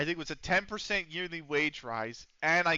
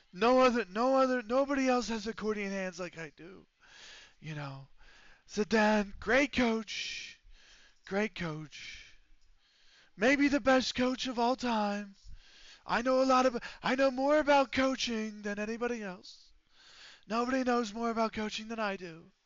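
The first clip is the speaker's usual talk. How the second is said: strained, pushed put-on voice; 7 semitones higher than usual. The speaker launches into a bit in a strained put-on voice. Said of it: "it slightly sounds like I'm constipated when I use this voice".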